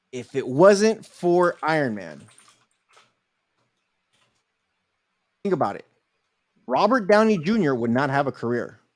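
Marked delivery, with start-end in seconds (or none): 0.2-5.9 very slow, deliberate, spelled-out emphasis. Arguing about Marvel films, saying this very slowly. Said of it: "I'm going to say this very slow".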